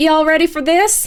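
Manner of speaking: put-on speaking with a Southern accent. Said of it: "Southern accent Grimmy".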